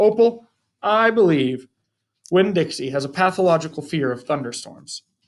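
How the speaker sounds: usual speaking voice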